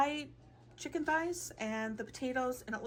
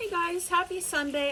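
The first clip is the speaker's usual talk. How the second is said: loud, high calling out; 6 semitones higher, 8 dB louder than usual. Speaker greets viewers while doing meal prep, talking really loud. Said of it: "I'm talking really loud because I'm doing meal prep".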